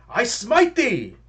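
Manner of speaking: courteous, very high-pitched yell. Declaring an attack on a creature in the game: politely yelled battle cry.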